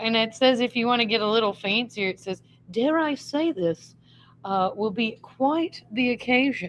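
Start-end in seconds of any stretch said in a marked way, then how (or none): 2.7-6.7 slow, fake upper-crust fancy British accent. Speaker reads out a fancier phrase from a guide in a put-on British accent. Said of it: "right now in our British accents".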